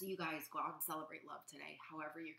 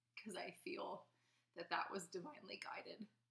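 emotional, heavy, sad-sounding voice; 3 semitones higher than usual. Speaking to viewers about a sad day for the community, getting emotional. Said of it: "I'm getting emotional again".

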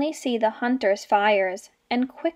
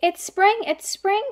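high, quick, delighted crying out; 8 semitones higher than usual. Alfie wakes in his cave and sees butterflies, crying out. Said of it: "Cried Alfie".

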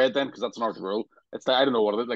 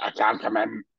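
put-on, fake sick voice. Joking about getting ready for snow at home, a fake sick voice. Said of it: "you start practicing your sick voice".

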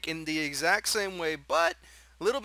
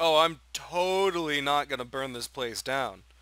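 mock, tongue-in-cheek, sarcastic, mocking tone; 3 semitones lower than usual. Imitating how someone talked at his first job: imitating a sarcastic tone. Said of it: "that's just how he, how he speaks".

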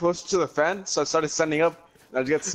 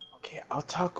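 hushed, very quiet whispered words; 2 semitones higher, 9 dB quieter than usual. Answering a teammate who asked for quiet: whispering. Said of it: "I'm whispering right now".

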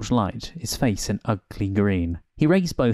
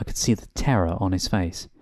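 plain

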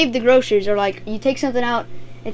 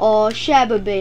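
sarcastic, insincere sympathy; 3 semitones lower than usual. Explaining an expression's meanings, showing its usual use: sarcastic tone. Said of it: "Usually in a sarcastic way, like".

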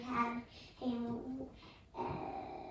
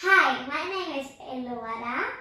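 speaking up, much louder; 12 dB louder than usual. A pupil repeats her introduction after the teacher asks, speaking louder. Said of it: "Little louder".

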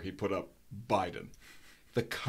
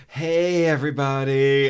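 put-on mocking voice, louder; 5 semitones higher, 11 dB louder than usual. Retelling a little girl imitating her mother, mocking Kim Kardashian's camera voice. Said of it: "completely changed her voice to kind of mock her mother".

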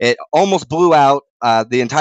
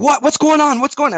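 mock shriek, pitched very high, alarmed screaming; 12 semitones higher than usual. Retelling a phone call where the other person started screaming: imitating someone screaming. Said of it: "then he starts screaming".

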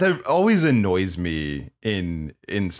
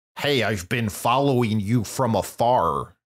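weird, put-on, mock American accent. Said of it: "he did a weird American accent".

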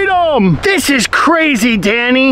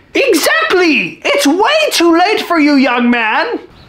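controlling grandmother character voice; 2 semitones higher than usual. In a sketch, a grandmother speaks to her grandson, grandmother character voice. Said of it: "What are you doing here, my grandson?".

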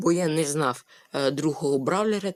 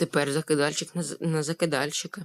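ordinary delivery

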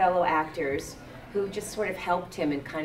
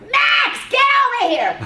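piercing, shrill, very high, very loud swooping yell; 13 dB louder than usual. Showing how she sounds yelling at her son, shrill yell. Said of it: "So when I'm yelling at my son".

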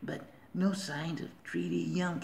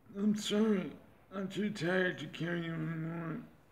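sounds like a cyborg robot. Speaker voices the character Ajax while narrating a game scene, Ajax voice. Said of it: "my Ajax voice is just like vanilla Cyrax".

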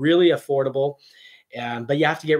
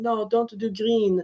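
high put-on cartoonish Italian accent, laid on; 8 semitones higher than usual. Retelling what she said about the speaker's Bronco plans, in a Mario accent. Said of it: "That was a Mario accent".

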